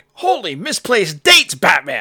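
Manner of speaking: high and loud, each word punched out. Joking about a trivia game's wrong answer, suggesting Robin speak, Robin voice. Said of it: "do this in Robin speak".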